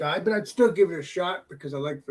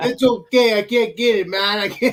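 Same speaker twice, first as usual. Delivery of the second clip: put-on Canadian accent, higher pitch; 5 semitones higher, 7 dB louder than usual. Trying a leprechaun accent that listeners say came out Canadian; Canadian-sounding accent.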